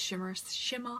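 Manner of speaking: put-on English accent on the word shimmer. Imitating how a presenter from England says a word: imitating an English accent. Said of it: "I watched that presenter from England and she, uh, she says".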